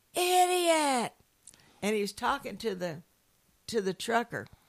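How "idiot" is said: very high, shrill, drawn-out startled yell. Telling a story, the speaker imitates an evangelist yelling at a trucker. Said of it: "he yelled".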